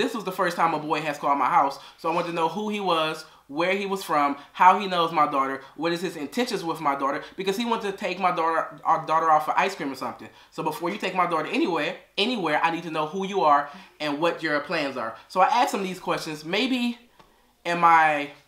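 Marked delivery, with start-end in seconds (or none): none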